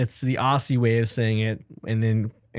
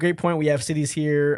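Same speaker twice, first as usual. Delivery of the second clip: usual speaking voice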